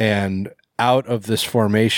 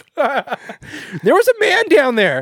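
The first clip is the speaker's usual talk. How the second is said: high, swooping, drawn-out, angry put-on woman's voice; 4 dB louder than usual. Imagining his own voice redubbing a woman's parts in a movie, put-on angry female voice. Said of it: "this is my female voice".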